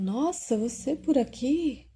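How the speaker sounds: play-acted high, startled, caught-off-guard exclamation. Retelling a man's reaction on suddenly seeing his obsessing spirit, mock-surprised.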